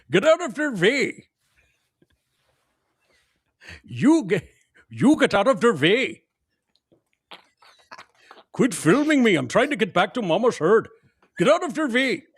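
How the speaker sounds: put-on Indian accent. Voicing an elephant in a video, elephant voice with indian accent. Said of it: "he's got an Indian accent".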